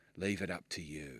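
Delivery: low, menacing voice with sinister undertone. Showing how a simple line of dialogue can sound: sinister undertow. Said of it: "when you put it that way and in that tone".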